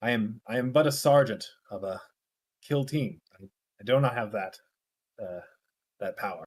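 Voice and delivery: very low, hushed half-whisper. As a kill team sergeant leaning in to someone's ear, half-whispering in someone's ear. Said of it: "he like whispers in your ear".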